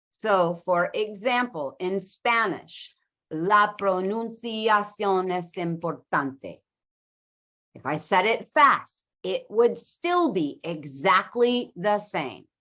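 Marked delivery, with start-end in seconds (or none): 3.3-6.6 steady, even syllable-timed rhythm. Demonstrating Spanish as a syllable-timed language, even syllable-timed rhythm. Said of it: "So it sounds very, very even".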